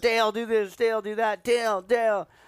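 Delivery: shrill, very high, stretched-out shouting. Retelling coaching a fighter from the corner: retelling own yelling. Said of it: "So I was yelling".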